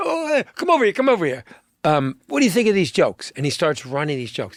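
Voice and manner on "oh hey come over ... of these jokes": stuttering, stammering delivery, pitch a bit higher. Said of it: "the way he stuttered and kind of said it".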